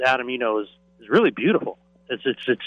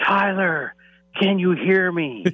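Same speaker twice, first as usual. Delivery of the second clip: put-on screaming, higher; 7 semitones higher than usual. Retelling screaming into a phone that did not work: imitating own screaming. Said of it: "I was screaming".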